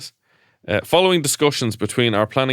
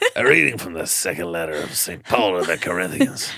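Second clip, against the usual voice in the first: raspy put-on priest preaching voice, lower pitch; 4 semitones lower than usual. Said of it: "Raspy sermon".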